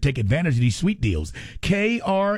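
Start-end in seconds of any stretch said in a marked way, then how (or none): 1.6-2.4 very slow, deliberate, pitched-up, spelled-out enunciation. Speaker urging listeners to visit a website, saying it slowly. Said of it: "I'm going to say it slowly to you".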